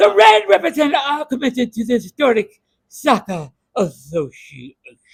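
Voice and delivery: grand, loud, swooping put-on fancy voice. Speaking as the voice of the new logo, in a fancy voice. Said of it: "That's my fancy voice".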